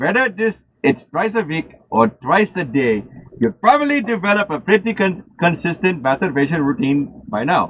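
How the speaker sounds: put-on Indian accent, read aloud. Presenting a list of signs in the Indian voice: imitated Indian accent. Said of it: "And I'll do it in the Indian voice".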